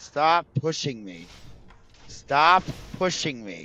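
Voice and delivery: put-on furious voice, angry, high and drawn-out. Retelling what they said on the day they were very angry: retelling own angry words. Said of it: "I was very angry that day".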